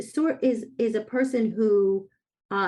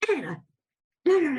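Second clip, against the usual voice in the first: mock high, angry, scolding New York accent; 7 semitones higher than usual. A mother retells scolding her daughter in the car, retelling her new york anger. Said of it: "doing my New York anger thing".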